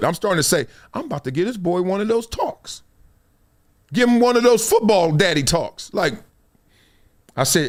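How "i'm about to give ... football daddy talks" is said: ordinary delivery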